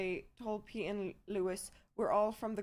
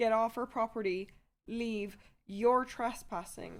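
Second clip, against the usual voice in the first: mock stern, firm and insistent yell. Retelling ordering trespassers off the property: imitating own past yell. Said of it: "they start yelling back at me".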